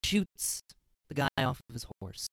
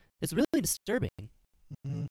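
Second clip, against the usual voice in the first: ordinary talk, nothing marked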